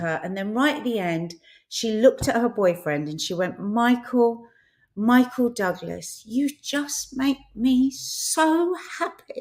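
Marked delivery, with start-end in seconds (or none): 3.6-9.4 put-on choked-up tearful voice, high, very slow. Retelling how she thanked her boyfriend at the end: imitating someone tearful. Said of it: "it was just the way of crying again".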